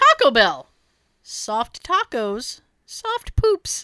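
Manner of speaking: very slow, swooping voice, stifling laughter. Reading a joke slogan aloud, trying not to laugh: holding back laughter. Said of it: "Let me see if I can do this li-, without laughing".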